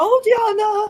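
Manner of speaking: put-on heavy German accent, very high pitched and very loud. Imitating a late aunt greeting someone: thick German accent. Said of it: "With her thick German accent".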